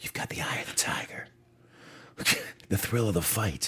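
soft, breathy whisper. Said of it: "She whispered in my ear".

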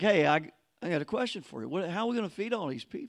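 playful, light, teasing tone. Retelling a question about feeding the crowd: imitating Jesus teasing. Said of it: "It's kind of teasing him".

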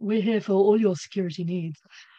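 radio advert announcer voice. Name-dropping a training company, delivering its slogan in a radio advert voice. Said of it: "you got radio voice there".

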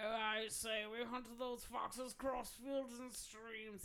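put-on loud, slurred, mouth-full drunk old man voice. Showing the others their go-to character, putting on a drunk fox hunter. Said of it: "He's also very drunk".

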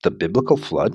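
Flood said with a questioning upward rise. Restating the episode title a second time: questioning tone. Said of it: "in a questioning tone".

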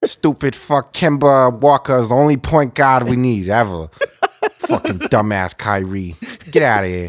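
put-on, fake Boston accent. Doing a bit as angry Celtics fans: put-on Boston accent. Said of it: "Boston or the Bronx or whatever that accent was".

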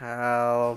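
put-on slurred, drawn-out drunk voice, words running together. Retelling lying drunk in the bathtub, calling for help: imitating slurred drunken words. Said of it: "just slurring my words".

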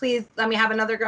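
ordinary talk

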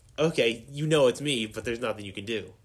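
ordinary talk

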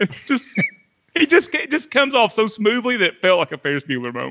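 ordinary delivery

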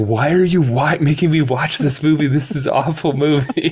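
put-on high-pitched sobbing, crying out the words. Retelling watching E.T. with Xavier, imitating Xavier sobbing. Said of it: "Xavier's just like sobbing like".

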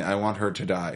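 ordinary talk, nothing marked

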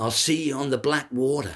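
mock, high, shouted officer's call. Recounting an older officer coming over toward him, imitating an officer shouting. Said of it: "he shouts out".

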